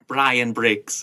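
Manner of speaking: put-on Liverpool accent. Repeating a character's line: Samantha Briggs impression, Liverpool accent. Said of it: "I can do a Liverpool accent really well".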